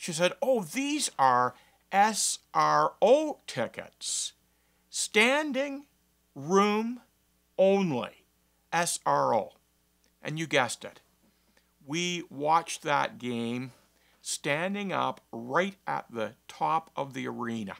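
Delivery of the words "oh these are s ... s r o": mock booming, very loud, very slow announcer voice. Retelling an usherette reading out the ticket type: imitating a very loud announcement. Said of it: "in a very loud voice so that I could hear".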